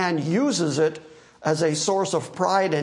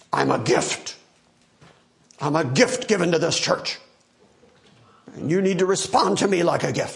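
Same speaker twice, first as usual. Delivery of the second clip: mock swaggering, self-important, grand, boastful bravado. Quoting a former pastor addressing his church, imitating great bravado. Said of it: "say with great bravado".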